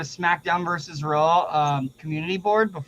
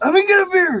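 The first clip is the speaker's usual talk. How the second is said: screamed voice, higher and louder; 13 semitones higher, 7 dB louder than usual. Retelling a wrestler begging for a beer: imitating Sandman screaming. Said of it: "you just hear him screaming".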